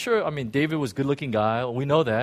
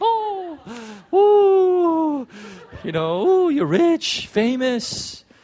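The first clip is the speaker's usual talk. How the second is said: put-on very high, very slow, drawn-out ooh in girl voice; 13 semitones higher, 6 dB louder than usual. Describing an insecure girl's thoughts about a king, doing an impression of her. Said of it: "this is my own best impression".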